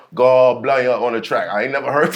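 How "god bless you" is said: put-on Barbadian accent, louder. Answering how the Bajan accent sounds, giving an example line: imitating a Bajan accent. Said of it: "what was the Bajan accent sound like".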